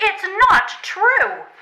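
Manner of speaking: loud, high shout. Denying the other speaker's claim about Squeezer's overbite, shouting. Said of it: "Why shout".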